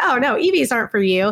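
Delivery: normal talking voice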